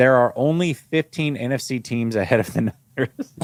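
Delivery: plain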